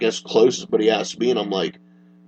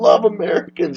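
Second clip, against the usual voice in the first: stupid, high, bad put-on Scottish accent; 7 semitones higher than usual. Retelling what a man said after hugging them, in a stupid fake Scottish accent. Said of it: "I'm still doing a stupid non Scottish accent".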